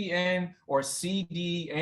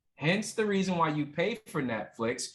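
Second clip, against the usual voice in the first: normal talking voice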